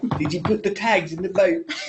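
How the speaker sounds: put-on Australian accent, tried on the spot. Asked in front of the group to try one, doing an australian accent attempt. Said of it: "Who's got a very good Australian accent?".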